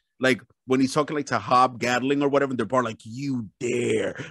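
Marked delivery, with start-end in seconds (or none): 3.0-4.2 put-on, lower, clenched-teeth furious voice. Imitating James McAvoy voicing Dream in a bar scene: clenched-teeth fury. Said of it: "he's clenching his teeth, but it gives out, like, fury".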